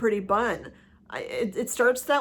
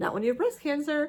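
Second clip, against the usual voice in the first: mock, slightly sarcastic, pitched-up retort; 5 semitones higher than usual. Retelling own reply to someone calling medical leave a break: retelling a sarcastic reply. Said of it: "it's a little bit sarcastic".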